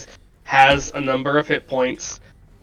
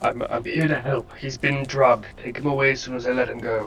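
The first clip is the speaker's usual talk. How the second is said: soft, half-whispered acted stage whisper; 6 dB quieter than usual. Speaking as a character freeing a drugged captive: half-whispering in character. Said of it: "I'm gonna whisper to this guy".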